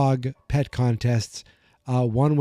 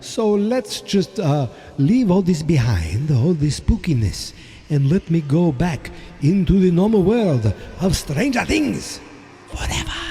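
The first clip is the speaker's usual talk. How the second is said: put-on spooky vampire voice, higher; 5 semitones higher than usual. Introducing a Halloween episode over spooky sounds: Dracula voice. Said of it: "do some sort of Dracula voice to you guys".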